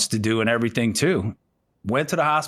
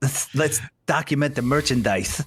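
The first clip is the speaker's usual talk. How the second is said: fake lisping. Retelling an actor's line from the film: James Remar impression with a lisp. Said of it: "He had that little lisp when he talked".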